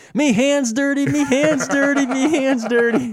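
put-on very high, very loud, drawn-out child's scream. Retelling how a small child screamed after falling in sand: imitating a screaming child. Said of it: "she started screaming".

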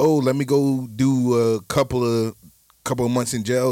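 plain

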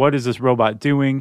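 normal talking voice

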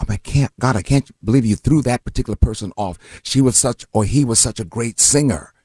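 ordinary delivery

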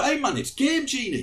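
fake Geordie accent. Recalling a voice line recorded for Game Genie, very bad Geordie accent. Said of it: "I put on a very bad Geordie accent".

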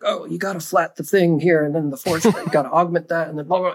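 put-on rambling nutty-professor voice, muttering. Imitating a musician from his second record, rambling nutty-professor voice. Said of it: "sounded like a Nutty Professor just like talking to himself".

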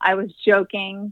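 ordinary talk

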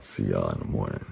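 very quiet, hushed, raspy, sexy bedroom voice. Tell everyone you will see them in the morning, in a sexy, raspy in-bed voice. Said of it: "with his sexy, raspy, I'm in bed with my hot wife voice".

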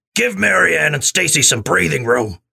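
put-on smoker's character voice. Reading Mrs. Pike's line to the girls, in a Kathleen Turner-style voice. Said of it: "Does she have a cigarette hanging out of her mouth?".

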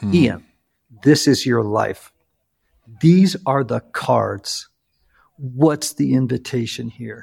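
severe, serious, very stern low voice. Retelling what a man said to the speaker, imitating someone sounding stern. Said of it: "in a very stern voice".

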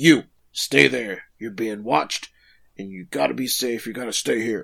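put-on bossy, commanding tone. Retelling how a boy orders a girl to stay put: imitating a commanding order. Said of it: "commands her".

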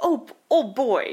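put-on American accent. Imitating a film's photographer character: Peter Wells in American accent with Britishisms. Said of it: "speaks in an American accent but keeps saying Englishisms".

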